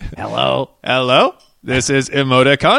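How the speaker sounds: loud, slow robot voice with rising up-talk. A podcast host speaking as Emoticon, in an Emoticon robot voice. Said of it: "Maybe it's an up-talking robot voice".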